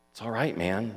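very gentle, tender. A man reassures the narrator; very tenderly. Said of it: "Jake said very tenderly".

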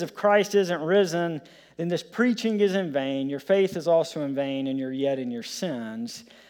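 ordinary delivery

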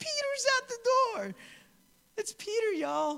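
put-on very high, gushing, excited teenage girl voice. Reading a Bible verse aloud, the speaker voices a woman's exclamation: voice like a 14-year-old girl.

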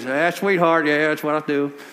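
imitated Southern accent. Retelling what a tobacco-chewing woman said to them, in a put-on southern accent. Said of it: "she's got that Southern thing going on".

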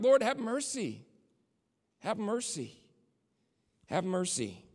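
put-on pleading cry, crying out. Speaker retelling how a woman cried out to god, retelling a cry for mercy. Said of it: "she cries out".

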